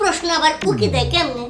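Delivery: ordinary talk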